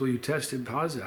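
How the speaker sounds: normal talking voice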